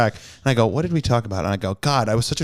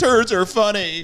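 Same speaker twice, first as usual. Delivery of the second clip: mock tearful sobbing in a very high voice; 10 semitones higher than usual. Joking about making the listener cry, in mock sobbing. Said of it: "have you sobbing, being like".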